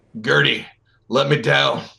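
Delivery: very rough, gruff, creaky voice. Storyteller voicing someone inside the jack calling to Gertie, very gruff voice. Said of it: "You hear a very gruff voice inside say".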